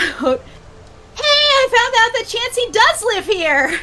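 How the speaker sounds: high, slow, thrilled excited blurt. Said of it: "just kinda blurts out".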